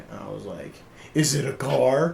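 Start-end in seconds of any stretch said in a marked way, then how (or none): 1.1-2.1 sarcastic, very slow and dragged out. Retelling being offered a birthday present at her house, retelling a sarcastic remark. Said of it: "I was being like sarcastic".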